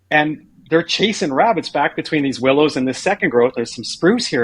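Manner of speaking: ordinary talk, nothing marked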